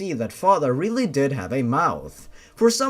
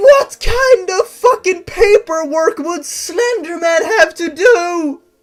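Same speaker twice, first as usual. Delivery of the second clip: high, loud, shrill voice spiraling out of control; 10 dB louder than usual. A narrator reading a story aloud breaks off to comment, voice getting out of control. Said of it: "My voice, it's, it's getting out of control".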